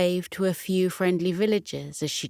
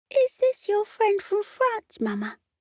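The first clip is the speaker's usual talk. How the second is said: tiny, squeaky, very high little voice. Reading a story, a little stoat asks its mama a question in a squeaky voice. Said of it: "asked in a squeaky voice".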